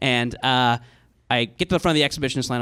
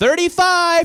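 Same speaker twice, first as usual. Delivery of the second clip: loud, very high called-out shout; 5 dB louder than usual. Retelling a man yelling back at his camp: retelling a yell. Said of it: "looks back at his camp and yells".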